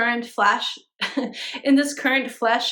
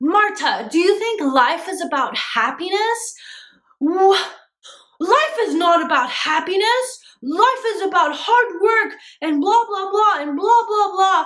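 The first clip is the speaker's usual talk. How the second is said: mock raging, preachy, high-pitched yelling rant; 7 semitones higher, 4 dB louder than usual. Retelling how a boss started yelling at her: imitating someone yelling. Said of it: "He starts yelling at me".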